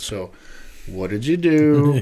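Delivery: sarcastic delivery. Retelling questions put to someone who cut his kneecap open: imitating own sarcastic tone. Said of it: "sarcastic mode came in".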